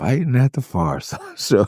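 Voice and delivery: put-on, supremely let-down, disappointed tone. Retelling what a band member said when a fight started: imitating disappointed remark. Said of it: "the supreme disappointment".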